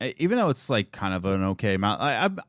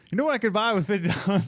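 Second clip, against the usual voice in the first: pitched-up, incredulous, put-on complaining voice; 7 semitones higher than usual. Told the other speaker sounds like Chris's dad, the speaker does a Chris's dad impression. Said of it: "You sound like Chris's dad".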